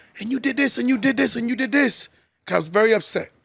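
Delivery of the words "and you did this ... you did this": mock exasperated, heated rant. A parent retelling scolding their son, retelling screaming at son. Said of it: "I'm screaming at him".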